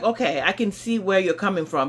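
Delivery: ordinary delivery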